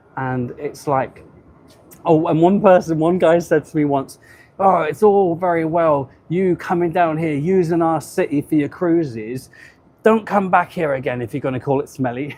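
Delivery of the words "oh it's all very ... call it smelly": aggrieved, indignant, upset grumbling. Retelling what an online commenter said about Southampton: imitating an upset man. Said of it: "Some people get really upset online".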